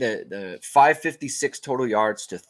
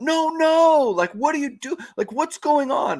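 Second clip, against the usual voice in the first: put-on very high, shrieking, screamed outburst; 4 dB louder than usual. Retelling a reaction to seeing an interception: retelling own scream. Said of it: "I just screamed out".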